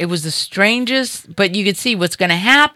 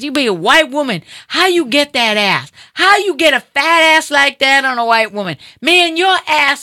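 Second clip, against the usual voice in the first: put-on high, hollering catcall yell; 6 semitones higher than usual. Telling a story, the speaker acts out a man yelling at her as he approaches, imitating a man yelling. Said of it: "he's talking to me and he's yelling".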